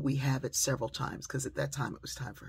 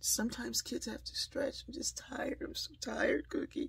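put-on tiny, whiny, creaky little child voice, very high; 10 semitones higher, 4 dB quieter than usual. Describing a child dodging new work by stretching: imitating Elena's little voice. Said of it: "she starts using a little voice".

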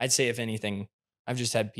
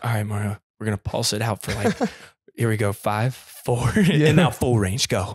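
put-on whisper; 9 dB louder than usual. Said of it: "I guess I do do the whisper thing".

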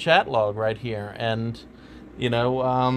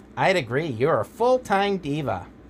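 nasal rat voice, much higher pitched; 2 semitones higher than usual. Voicing a man's replies, in a nasally rat voice. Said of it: "he's got this nasally rat voice".

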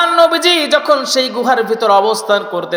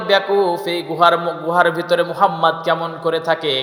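plain

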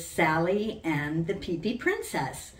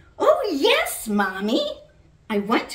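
loud, sing-song, joyful, eager, delighted tone; 9 semitones higher, 7 dB louder than usual. At bedtime, the little girl answers her mommy's idea, exclaiming with delight. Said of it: "she exclaimed with delight".

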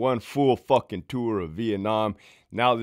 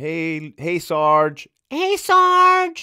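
very slow, high, loud, drawn-out and annoying; 6 semitones higher, 6 dB louder than usual. Retelling how the women at work greeted Sarge: imitating an annoying voice. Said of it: "Fucking annoying ass voice".

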